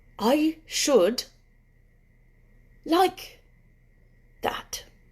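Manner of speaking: very drawn-out, slow, faraway, dreamy, high musing. Narrator reading a character's reply in a story, very slow. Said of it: "he said very slowly".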